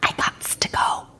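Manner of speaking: put-on soft, breathy, hushed little-girl whisper. After a booming voice calls her name from the hall, she answers, whispered. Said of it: "she whispered".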